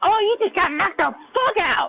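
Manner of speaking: high-pitched comic character voice, pushed way up. Mocking a reaction to someone knocked out: Smokey voice. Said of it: "instead of sounding like Smokey and Friday, Chris Tucker's character".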